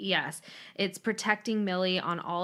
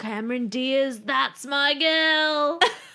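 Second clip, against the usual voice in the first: put-on loud bad Australian accent, girl drawn out; 7 semitones higher, 7 dB louder than usual. Quoting a film line that the speaker's brother says all the time, as a terrible Eric Bana impression. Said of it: "he has this Australian accent".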